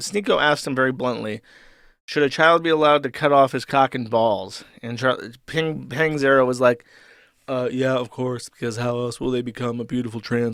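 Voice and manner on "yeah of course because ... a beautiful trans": absurdly low, deep, droning mumbled monotone. Retelling how Charlie answered Sneeko's question, in a Charlie voice. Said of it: "my Charlie voice is just mwah, perfect. ... deepen your voice ridiculously and, and like mumble in monotone".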